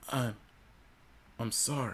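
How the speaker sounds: feeble, small, soft, weak voice. Narrator reading a story, replying to a voice she recognized, in a soft, weak voice. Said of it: "in my soft, weak voice".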